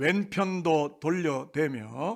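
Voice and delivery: slow, drawn-out, stretched delivery. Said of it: "한번 따라하겠습니다".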